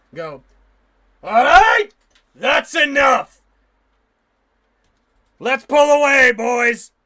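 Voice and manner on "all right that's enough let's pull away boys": very loud, booming, commanding shout. Narrating a scene, a voice calls out from behind you: loud booming voice. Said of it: "loud, booming fucking voice from behind you".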